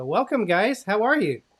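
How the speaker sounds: loud, high-pitched yell. Welcoming two guests who just joined the call, yelling. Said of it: "You're yelling at them".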